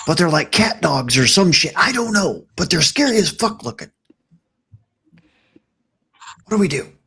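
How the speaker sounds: stage whisper, high. Huddling the party close around a corner, speak in a stage whisper. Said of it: "We're gonna stage whisper".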